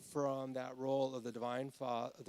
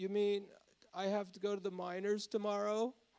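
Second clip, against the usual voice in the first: put-on sweet young child voice, higher; 7 semitones higher than usual. Retelling a scene where Rusty interrupts a long lecture: Rusty's sweet seven-year-old voice. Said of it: "in his really sweet seven-year-old voice".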